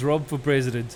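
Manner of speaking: usual speaking voice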